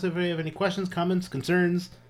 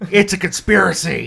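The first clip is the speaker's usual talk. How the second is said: bad put-on wrestling commentator voice, higher and louder; 5 semitones higher, 11 dB louder than usual. Joking about reading silly text as commentators: awful Jesse Ventura impression. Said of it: "That's my awful Jesse Ventura impression".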